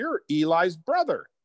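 play-acted, big, full-volume, high-pitched outburst. Retelling a meeting with Peyton Manning, imitating Sean's big, loud voice. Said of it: "with a big, loud voice and says".

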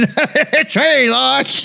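talking without moving lips. Speaker showing how a lipless character should talk, talking without lips. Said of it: "talking like this".

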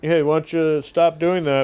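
calm, slow, even and polite tone.

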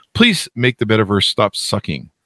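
normal talking voice

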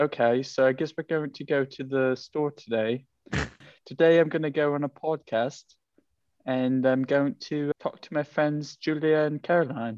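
amateurish put-on attempt at British accent. Speaker shows the accent people keep commenting on: attempted british accent. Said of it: "so do a British accent".

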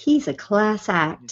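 put-on warm voice. Imitating how Cote said a compliment, in the warm Cote voice. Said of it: "the warm Cote voice".

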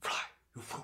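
hoarse, raspy whisper. Asked by co-hosts to do a famous movie line, an actor delivers it in a hoarse whisper. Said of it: "With the kind of hoarse whisper".

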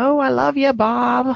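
very high, sweetly dim, airheaded Midwest mom voice. Describing a show's wife character, quoting her to bob in an airheaded midwest mom voice. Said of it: "sounds like a Midwest mom".

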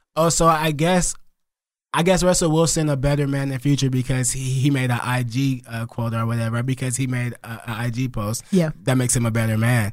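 ordinary talk, nothing marked

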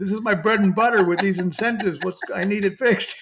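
mock all-panicked, loud pleading voice. Retelling a man's call about a platform glitch, imitating a panicked caller. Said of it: "he was all panicked".

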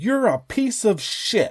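high, drawn-out screaming. Retelling what a guy in the stands yelled: imitating a man screaming. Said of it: "just screaming".

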